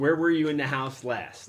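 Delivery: ordinary delivery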